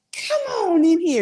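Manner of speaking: raspy, very high-pitched voice. Retelling an aunt greeting children at her door: imitating Aunt Phony's raspy voice. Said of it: "She had a raspy voice".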